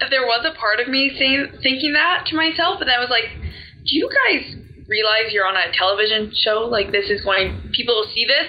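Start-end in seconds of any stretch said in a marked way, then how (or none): none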